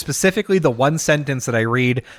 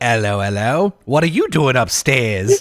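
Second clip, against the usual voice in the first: fake, put-on British accent. Reacting on finding someone under the sheets, in a put-on British accent. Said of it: "I don't know how to say upstairs with a British accent".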